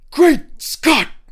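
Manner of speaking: shrill, very high, loud, booming exclamation. Asked for his best Great Scott, a speaker gives the exclaiming impression. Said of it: "Hit me with your best Great Scott".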